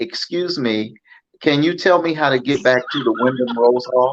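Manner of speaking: exaggerated, laid-on-thick American accent. Asking a man holding a rifle in a car for directions, in the most american accent possible. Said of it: "in the most American accent that I have".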